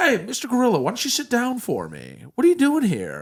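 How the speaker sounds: very high pitch with big swooping intonation. Questioning a gorilla about a kid in its cage: Chris Hansen voice. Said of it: "That was my, uh, Chris Hansen".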